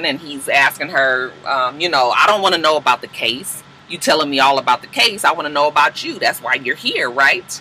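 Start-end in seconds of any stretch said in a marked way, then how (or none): none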